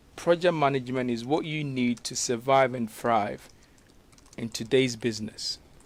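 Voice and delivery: ordinary talk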